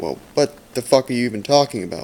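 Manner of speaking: plain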